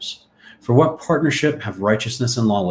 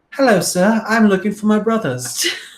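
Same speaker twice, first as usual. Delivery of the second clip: put-on very high-pitched small English boy voice; 10 semitones higher, 4 dB louder than usual. Retelling Joseph's reply to a man in a Genesis story: Tiny Tim accent. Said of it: "that's my Tiny Tim accent".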